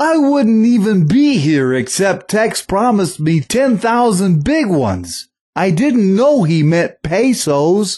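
very high-pitched comic character voice, played for laughs. Joking about a demo tape while posing as Alf: Alf impression. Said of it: "this is Alf".

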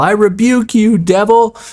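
very high, drawn-out, scolding yell. Acting out confronting the devil at the foot of the bed: yelling a rebuke. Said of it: "you now have to yell".

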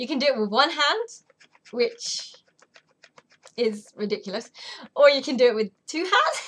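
helpless laughing and giggling through the words. Speaker explaining how to use a product: giggling. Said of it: "I can't stop giggling".

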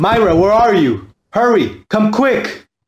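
urgent, slow, drawn-out calling voice. A character calls for someone to come quickly, yelling. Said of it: "What the hell are you yelling about?".

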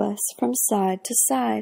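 plain

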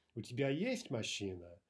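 stress on есть, rising then falling. Teaching Russian question intonation with an example, stress on есть. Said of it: "the rise and fall on the word in a question that's most important".

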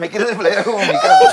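loud laughing talk with wide pitch range.

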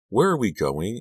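breathless. Following someone into the woods, the narrator asks breathlessly. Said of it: "I asked breathlessly".

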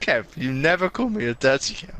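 nervous voice breaking, cracking mid-line. Protesting about being called a name, nervous, voice cracking. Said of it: "Your voice crack".

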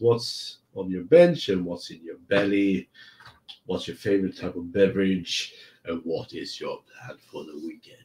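whiskey-toned voice. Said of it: "my whiskey voice just went straight into this one".

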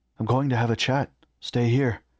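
plain reading voice

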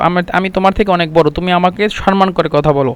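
normal talking voice

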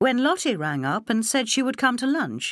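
plain

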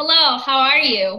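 very loud projected voice. Talking over lots of people in a restaurant, projected voice. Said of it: "an example of a projected sound".

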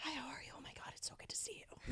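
whispered, very soft, breathy, soft-spoken voice. Retelling how a friend sounds when he talks: imitating Billy's soft-spoken voice. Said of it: "he has a very soft-spoken speaking voice".

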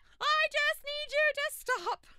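frustrated, exasperated, loud, high yell.

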